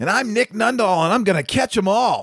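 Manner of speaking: put-on very high, pure little boy voice. A show host introduces himself, pure little boy voice. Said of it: "very pure little boy voice".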